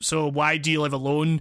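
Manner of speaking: plain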